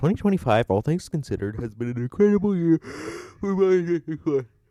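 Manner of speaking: speaking through a yawn. Just woke up, giving a year-in-review update, yawning mid-sentence. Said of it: "Sorry, I just yawned there".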